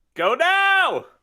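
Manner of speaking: very high, very loud, shrill, piercing scream. Urging the others to go for the train: screaming. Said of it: "Sorry for screaming".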